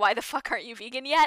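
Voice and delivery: ordinary talk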